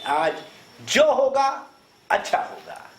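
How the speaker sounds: stress on जो and on अच्छा. Reading out a shared line, with stress on जो and अच्छा. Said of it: "जो पे ध्यान दें और अच्छा पे ध्यान दें।".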